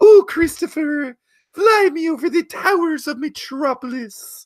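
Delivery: very high, loud, put-on puppet voice. Showing off the voice meant for a video project, a Miss Piggy impression. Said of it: "my Miss Piggy voice".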